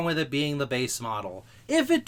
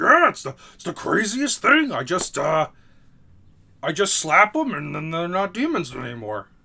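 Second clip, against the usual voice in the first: loud, booming monster voice; 3 semitones higher, 5 dB louder than usual. Retelling a cartoon scene, doing Chopper's Monster Point voice. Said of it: "'cause he's in Monster Point, that's the voice".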